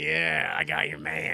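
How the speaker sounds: acted slow, smug, self-satisfied gloating tease. Retelling a film scene where the girl smiles behind her father: imitating a smug, smiling taunt. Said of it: "Esther just smiles from behind him like".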